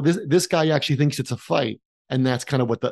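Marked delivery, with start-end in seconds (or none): none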